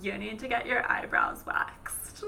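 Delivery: put-on snide, mean-girl style, taunting whisper.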